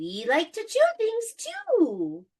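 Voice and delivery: weird tiny little voice, high and swooping. Storyteller voicing mushrooms that pop up, weird little voice. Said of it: "are you talking in a weird little voice?".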